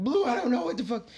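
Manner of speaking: high, loud, distraught outburst. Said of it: "I'm fucking distraught here".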